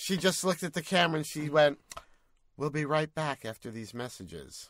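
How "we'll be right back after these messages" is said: put-on dry, matter-of-fact, dead straight deadpan. Retelling how a woman looked at the camera and announced a break; imitating her deadpan delivery. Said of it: "Sort of like deadpan".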